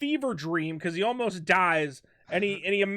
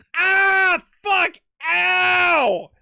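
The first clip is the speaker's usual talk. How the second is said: mock angry pained cry, loud, high, ow stretched; 10 semitones higher, 7 dB louder than usual. Imagining the scene he wants after a laser shot: mock-pissed Han Solo in pain. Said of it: "Han Solo would be pissed".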